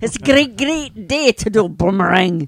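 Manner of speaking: put-on Scottish accent. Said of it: "How about with a Scottish accent?".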